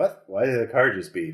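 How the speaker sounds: startled, bewildered, confused voice. Voicing a person watching TV who hears a car beep: startled confused voice. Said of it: "And he's definitely like".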